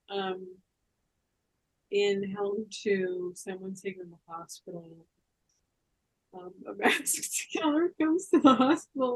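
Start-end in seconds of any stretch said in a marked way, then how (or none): 6.7-9.2 talking through laughter, higher and louder. Describing a horror film's plot, laughing while talking. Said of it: "I'm sorry, I'm just laughing".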